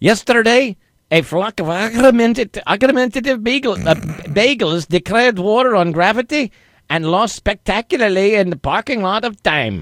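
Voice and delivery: put-on Scottish accent attempt. In an accent guessing game, a player reads a sentence for the guesser, Scottish accent attempt. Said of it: "he sort of sounds like Scrooge McDuck, so I'm going to say Scottish".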